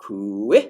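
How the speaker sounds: kui rising up from a low start. Latin lesson on the relative pronoun forms: kui rising from a low start. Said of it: "Hear how you pull it up from below as a relative pronoun".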